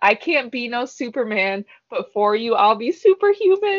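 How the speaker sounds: ordinary delivery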